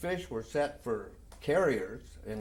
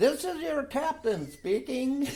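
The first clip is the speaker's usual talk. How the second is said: squeaky, very high-pitched, loud loudspeaker voice; 13 semitones higher, 5 dB louder than usual. Recalling his ship's captain on the loudspeaker before action, imitating his high-pitched voice. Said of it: "He had a high pitched voice".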